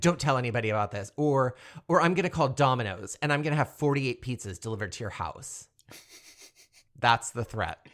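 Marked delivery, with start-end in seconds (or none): 0.0-5.7 put-on, fast, frantic, panicked babbling. Retelling a movie character's threat, imitating someone freaking out. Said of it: "she starts freaking out and is like".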